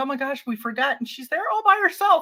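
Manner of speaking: high-pitched, fast, alarmed blurt.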